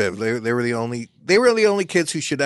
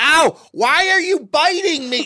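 put-on very high-pitched screaming; 3 dB louder than usual. Retelling how a mother reacted to her breastfeeding baby: imitating a mother screaming. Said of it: "screaming at him".

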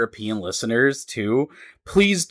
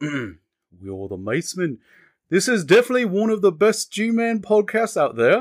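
attempted British accent, higher; 6 semitones higher than usual.

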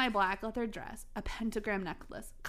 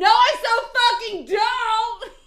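very loud, shrill, high-pitched shouting; 13 semitones higher, 15 dB louder than usual. Reading a story aloud, the narrator answers a question about Draco: shouting. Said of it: "I shouted".

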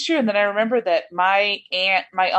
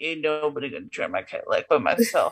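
put-on words slurred together, half-swallowed, indistinct muttering; 6 semitones lower, 4 dB quieter than usual. Imagining how Samuel talks, a mumbling Samuel voice. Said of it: "Samuel might be a mumbler... he'll mumble. So he'll be like".

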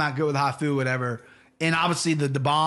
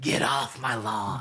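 low-pitched, slow drawl; 4 semitones lower, 4 dB quieter than usual. Showing an old impression he used to do: Clint Eastwood impression. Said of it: "I used to be able to do a Clint Eastwood".

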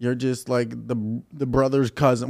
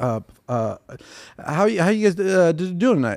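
halting, nervous stammering mumble, uncertain, rising; 5 semitones higher than usual. Acting out a nervous comic greeting the crowd: imitating nervous stuttering mumble. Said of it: "mumbling your words and stuttering".

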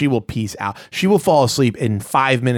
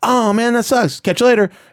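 very high, breezy, casual dismissive tone, tossed off lightly; 11 semitones higher, 3 dB louder than usual. Showing the others an impersonation of a TV actor: Aziz Ansari impersonation. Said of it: "this is what Aziz Ansari does".

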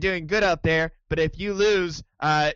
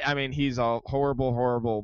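normal talking voice

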